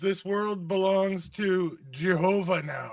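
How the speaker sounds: deliberate, drawn-out proclaiming tone in character voice. Playing a character in a tabletop game, before attacking: in-character yell. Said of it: "to my yelling?".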